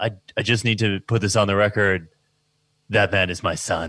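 deeply disappointed, let-down tone. Imitating a father stating something for the record: imitating a disappointed tone. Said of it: "in such a disappointed tone".

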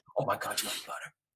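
fake American accent, laid on thick. Acting out a gushing exchange about butter: put-on American accent. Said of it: "we did that in an American accent".

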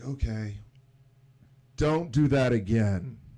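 loud, slow, deliberate voice. Retelling what a man said after the whole thing set off; much louder voice. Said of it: "In a much louder voice".

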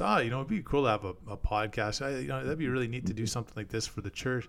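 ordinary talk, nothing marked

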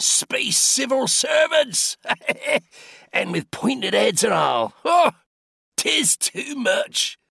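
very high, laughter-filled roaring outburst. A character responds to a civil service official, roaring with laughter. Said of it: "roaring with laughter".

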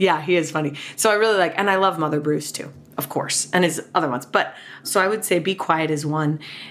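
plain

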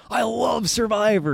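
very high, crazed, insane, unhinged delivery. Saying what Jeff is like now: imitating Jeff, insane. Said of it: "now he's insane".

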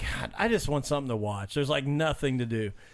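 ordinary talk

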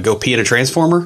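usual speaking voice

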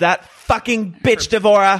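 put-on mid-Atlantic accent, pitched way up. Recapping a scene from the show for co-hosts, doing Alex's mid-Atlantic accent. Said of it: "She has kind of like a mid-Atlantic accent".

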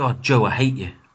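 very camp, teasing delivery. Telling another speaker that they hate them: camp delivery. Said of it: "You said that very camply".

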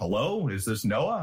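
large, big-voiced delivery. Retelling an unknown caller's first words on the phone: imitating a big voice. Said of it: "there was this big voice".

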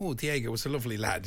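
plain

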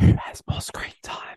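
speaking in a whisper. Asking the other players a quiz question, whispering. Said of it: "Why whispering?".

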